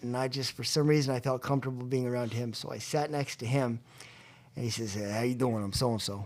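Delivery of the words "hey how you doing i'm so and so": put-on easygoing New York accent. Retelling an old hippie's greeting when sitting next to him, New York accent. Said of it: "That was a pretty good accent".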